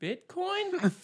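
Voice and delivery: very high, curious, inquisitive lilt. Teasing how she asks halfway through episodes: imitating Liz's inquisitive "Bitcoin?". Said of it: "saying inquisitively halfway through episodes, like".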